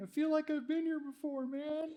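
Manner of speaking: very high fake tipsy, drunk-sounding voice. Speaking to an audience, the speaker acts it out in a put-on drunk voice. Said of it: "That's that's my drunk voice".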